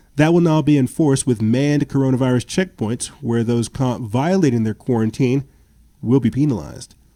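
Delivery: ordinary delivery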